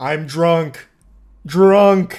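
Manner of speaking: loud, blunt caveman speech, one word at a time. Retelling a drunk driver's answers to officers: imitating Wayne's caveman speech. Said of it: "Speaking like a caveman with, like, one word".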